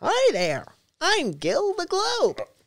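voice goes way up into a squeak. Showing how a planned video voiceover would have gone, in a Mickey Mouse voice. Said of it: "My Mickey Mouse voice".

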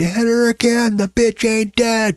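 very high, drawn-out scream. Retelling jumping up in a theater during a movie: imitating a scream at the screen. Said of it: "jumped up in the middle of the theater and screamed".

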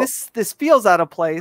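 plain

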